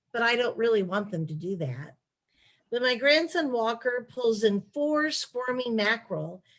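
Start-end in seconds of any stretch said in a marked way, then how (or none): none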